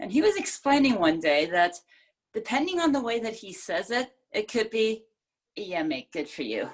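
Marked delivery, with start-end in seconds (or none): 5.6-6.7 put-on offhand, dismissive brush-off tone. Retelling how a british coach can say it, depending on his delivery: mock-dismissive. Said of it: "which is very, very dismissive".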